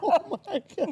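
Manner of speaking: high, slow, stretched out through laughter, disbelieving.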